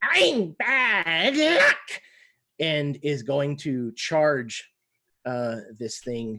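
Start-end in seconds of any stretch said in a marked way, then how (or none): 0.0-2.0 eerie, shrill, very high-pitched ghostly spirit voice. Voicing a ghostly kobold face that gnashes its teeth before a charge: ghostly kobold spirit voice. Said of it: "this lizard-like kobold face comes out, and it kind of gnashes its teeth".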